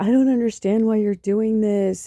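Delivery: distraught, hysterical, sobbing, pleading voice crying through words. Retelling the speaker's aunt calling on the speaker's birthday, imitating hysterical crying. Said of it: "she called me like hysterically crying".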